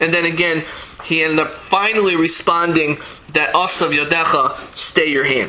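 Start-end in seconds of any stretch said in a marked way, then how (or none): none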